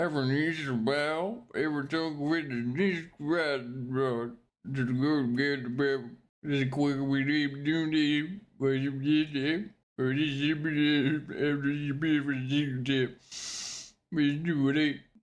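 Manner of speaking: really stupid voice, slow, after stretched out. Speaker performs robot Jesus after warning the voice will be stupid: stupid robot Jesus voice. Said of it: "It's gonna be a really stupid voice".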